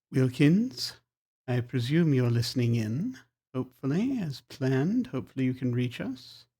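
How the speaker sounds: quiet, hushed, low-key voice. Narrator voicing a man with eyes closed addressing someone listening in, saying quietly. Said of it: "he just sort of says quietly".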